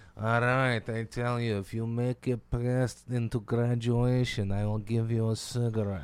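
put-on thick, heavy Hungarian accent. Imitating a Hungarian woman the speaker kept pestering during AIT, thick Hungarian accent. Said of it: "she had this thick accent".

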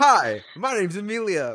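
mock overly formal, very high, sing-song delivery. Speaker shows how formally she introduces herself on the podcast: mock-formal self-introduction. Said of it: "because I try to do it so formally".

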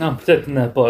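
normal talking voice

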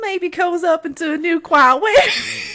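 loud, very high-pitched Southern US accent. Reading a line aloud and slipping into a southern accent. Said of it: "You totally went Southern".

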